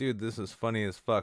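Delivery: ordinary delivery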